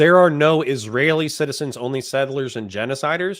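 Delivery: normal talking voice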